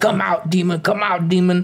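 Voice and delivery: forceful, aggressive, confrontational, in-your-face voice. Retelling a man getting in a realtor's face: imitating aggressive commanding. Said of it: "goes really aggressive on the ghost realtor".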